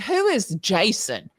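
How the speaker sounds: put-on broad American Southern accent. Retelling her own past question, in a big southern accent. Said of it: "with my big Southern accent".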